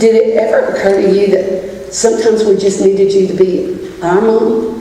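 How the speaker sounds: ordinary delivery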